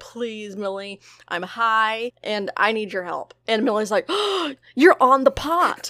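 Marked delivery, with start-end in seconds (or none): 0.0-3.3 mock-pleading voice, slower. Retelling how a woman begged another woman for help, imitating someone pleading. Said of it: "she pleads with her".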